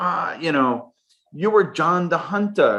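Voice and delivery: playful put-on German accent, played up. Retelling what a Swiss German boss said: put-on Swiss German accent. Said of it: "I always play around with this German accent".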